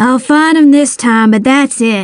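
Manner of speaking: ordinary delivery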